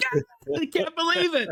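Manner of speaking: put-on, very high screamed outburst. Retelling watching the stream at the TV: imitating someone screaming. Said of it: "screaming at the T V".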